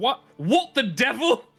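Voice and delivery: shouting. Game master voicing a character who yells as a door closes behind them: yelling. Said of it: "you hear him yelling like".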